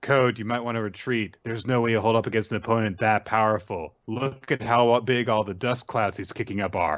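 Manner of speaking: usual speaking voice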